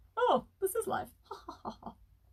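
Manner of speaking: very high voice trailing into a laugh. Doing an impression of a viewer named Adrian talking and laughing: imitating Adrian laughing. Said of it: "exactly how he sounds when he talks and laughs".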